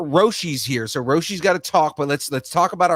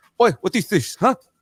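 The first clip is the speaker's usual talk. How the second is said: put-on Filipino accent, much higher pitch; 5 semitones higher than usual. Speaker describes growing up with a Filipino grandfather, imitating his Filipino accent. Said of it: "when you hear that accent".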